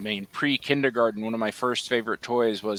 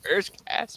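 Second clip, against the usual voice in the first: put-on tearful crying, higher; 10 semitones higher than usual. Retelling sitting as a child flipping channels: imitating own childhood crying. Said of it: "I'm just sitting there crying".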